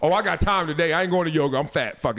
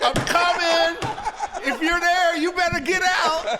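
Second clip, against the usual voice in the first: very high, cliché scary-movie style call; 10 semitones higher than usual. Retelling searching an empty house upstairs: retelling a dumb movie-style call. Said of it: "I'm doing the dumb movie shit".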